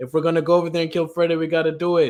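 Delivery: flat, one-note monotone, single unchanging inflection. Complaining about a girl with one inflection, imitating her: one flat, unchanging inflection. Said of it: "this girl has one inflection, and it's just like this".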